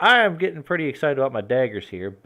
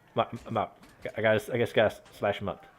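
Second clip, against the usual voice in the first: ordinary talk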